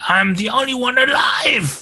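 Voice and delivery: very high, long-held, drawn-out shriek. Voicing a character who screams while fighting a player: screaming in character. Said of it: "I think he screams".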